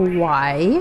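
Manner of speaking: suspicious. Narrator reads a man's reply to a request to see the shelter, suspicious. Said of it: "Arjun said suspiciously".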